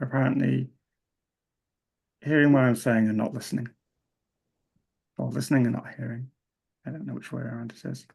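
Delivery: disappointed, let-down voice. Telling the group that people heard but did not listen: disappointed voice. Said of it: "you can probably hear in my voice how disappointed I am".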